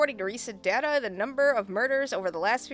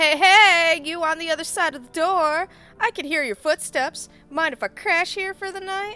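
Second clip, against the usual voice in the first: put-on cheerful friendliness, bright, high and raised; 6 semitones higher, 8 dB louder than usual. Voicing a character calling to someone behind a door, cheery voice. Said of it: "I gotta put on a cheery voice".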